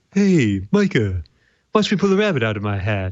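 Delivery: swooping, sing-song cartoon voice going up and down. Seeing something shaped like a moose, doing a Bullwinkle voice. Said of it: "I have to do my Bullwinkle voice with this".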